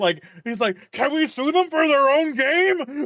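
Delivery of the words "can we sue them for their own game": shrill, very high, loud, frantic, losing-it panic. Imagining an executive who is losing his mind: imitating a panicking executive. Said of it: "a Sony executive losing his fucking mind".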